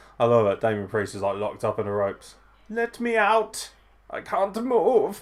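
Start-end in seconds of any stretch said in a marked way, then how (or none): 2.7-5.2 very high, very slow put-on German accent. Voice Damien Priest locked up in the ropes, though he's not German, in a put-on German accent. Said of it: "I just put that accent on him".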